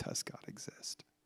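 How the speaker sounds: slow, hushed whisper.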